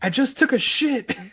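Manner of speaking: shrill, high-pitched screaming. Retelling a video bit of someone on a toilet: imitating a scream. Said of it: "he just screams".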